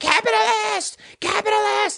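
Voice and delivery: mock very high shriek, repeated, screaming. Retelling a woman from Occupy Wall Street screaming at the speaker, retelling a scream. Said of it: "starts screaming".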